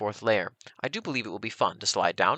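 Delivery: ordinary delivery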